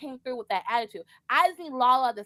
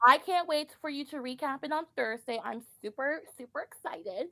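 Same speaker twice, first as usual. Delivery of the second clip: put-on Valley Girl accent and voice; 2 semitones higher, 4 dB quieter than usual. Speaking to the person who will recap the show on thursday, valley girl voice. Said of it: "I had to put my Valley Girl voice on".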